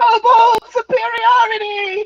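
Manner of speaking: very high, gloating, triumphant creature shout. Voicing a kobold who just won an arm-wrestle: triumphant kobold cry. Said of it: "raises his scaly arms up and is like".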